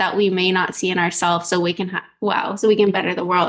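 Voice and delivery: ordinary talk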